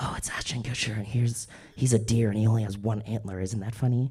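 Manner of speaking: very quiet, hushed half-whisper. Describing an ideal scene, half-whispering plot points into the listener's ear: half-whispering. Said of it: "I am whispering all the little plot points into your ear".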